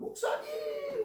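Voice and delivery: overjoyed, glad cry at very high pitch. Retelling being hugged and called out to: imitating a joyful greeting. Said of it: "너무 반가워하는 거".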